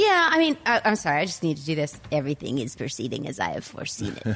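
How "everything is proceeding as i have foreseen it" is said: very low, hushed, softly spoken villain voice. Mid-discussion of a film theory, the speaker apologizes and tries a Palpatine impression. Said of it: "I can't do that voice".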